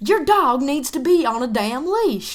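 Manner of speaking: put-on high, loud rural country accent. Retelling an argument, speaker quotes an old lady, redneck country voice. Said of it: "redneck ass country voice".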